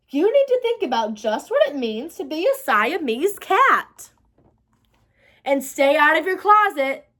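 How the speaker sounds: usual speaking voice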